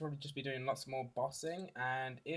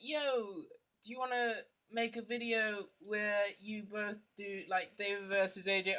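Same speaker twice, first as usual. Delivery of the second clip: attempted American accent, pitched up; 8 semitones higher than usual. Retelling what he said, for an american listener: best american accent attempt. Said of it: "this is my best American accent or sort of dialect attempt".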